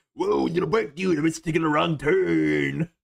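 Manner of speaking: rough, creaky voice with "turn" drawn out. Doing Otto from the Simpsons as a crossover bit: Otto voice. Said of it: "way better at that voice".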